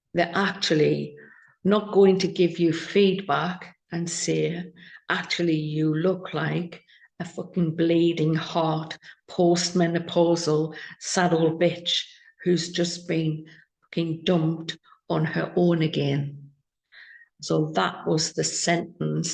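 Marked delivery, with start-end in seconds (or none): none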